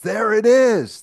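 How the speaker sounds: high, loud, slow excited yell. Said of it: "just yells".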